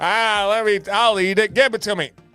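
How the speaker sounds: mock drunken speech. Retelling how a drunk friend at the fryer reacted, doing a drunk impression. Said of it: "this is my drunk impression".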